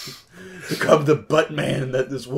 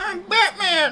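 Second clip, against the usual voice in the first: higher childlike put-on voice, like a little kid. Joking about a boy at his dad's grave: like a little kid saying it. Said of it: "like a little kid saying it".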